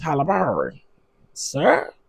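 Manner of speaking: animated voice with pitch swooping widely up and down. Speaker says a name in a Mo'Nique voice. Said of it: "in my Monique voice".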